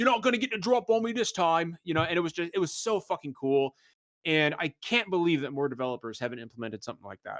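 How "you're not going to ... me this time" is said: put-on Cockney brute orc voice, pitched up. Retelling what a game enemy orc says: imitating an orc's Cockney accent. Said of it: "they have those Cockney accents".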